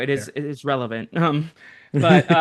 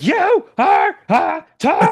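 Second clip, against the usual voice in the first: mad, upset outburst, very high and very slow; 13 semitones higher, 5 dB louder than usual. Speaker acting out how someone will react to losing, imitating someone mad and upset. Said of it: "He's gonna be mad and upset".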